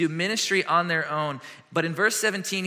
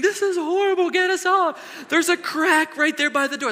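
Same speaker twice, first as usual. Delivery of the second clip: put-on shrill, very high, loud, frightened childlike screaming; 13 semitones higher, 5 dB louder than usual. Retelling the girls clinging on the swinging ride: imitating frightened screaming kids.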